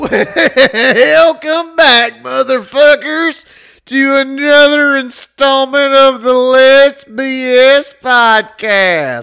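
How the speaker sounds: very loud, very high botched country accent. A podcast host opens the show's intro for his co-hosts, in a country accent. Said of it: "Are you going with like a country accent".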